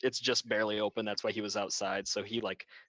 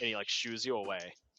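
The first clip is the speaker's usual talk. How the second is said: plain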